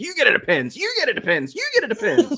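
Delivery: high, swooping, showy belted celebrity voice. Joking about being called high, speaker slips into an Oprah voice. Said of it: "in my Oprah voice".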